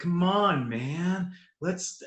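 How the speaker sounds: weirdly, really slow, drawn-out drawl. Describing a weird movie performance, the speaker imitates Duffy talking really slowly. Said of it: "they're talking really slow".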